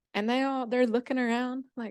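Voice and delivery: ordinary talk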